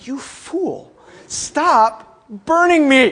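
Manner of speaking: slow, drawn-out pained scolding voice, pleading. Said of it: "My hands were saying".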